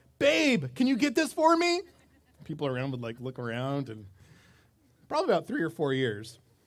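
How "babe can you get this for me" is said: put-on child voice, very high and loud, calling out. Parent retells a child calling out in a grocery store, loud call-out. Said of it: "he'd call out really loud".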